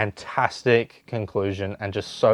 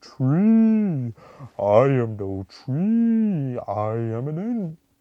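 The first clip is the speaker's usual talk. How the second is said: slow, drawn-out speech, every word dragged, pitched up; 5 semitones higher than usual. Reviewing the movie and mimicking how the Ents talk, in a slow Ent voice. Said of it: "they speak so slowly".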